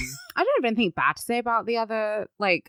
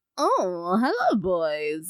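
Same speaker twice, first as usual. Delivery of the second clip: acted coquettish vintage film voice. Imitating a character's flirty shtick like Mae West. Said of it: "like a modern day Mae West".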